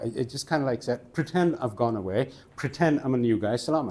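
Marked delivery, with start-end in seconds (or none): none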